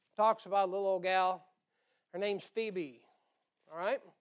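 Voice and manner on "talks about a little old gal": ordinary talk, nothing marked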